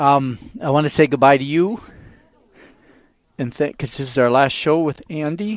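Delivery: moved, a little emotional. Radio host saying goodbye on the last show with Andy, getting a little emotional. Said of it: "sorry, I get a little emotional".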